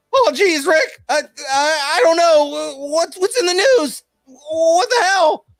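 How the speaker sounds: very high voice with very slow stutter. Answering a request to do Morty, Morty voice. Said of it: "can you do Morty?".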